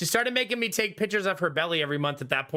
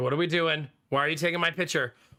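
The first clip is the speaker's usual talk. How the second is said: put-on worried dog voice; 2 semitones lower than usual. Looking at photos of the family dog, voicing her: put-on worried pet voice. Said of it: "She's like".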